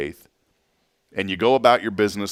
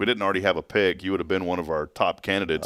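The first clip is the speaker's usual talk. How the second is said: usual speaking voice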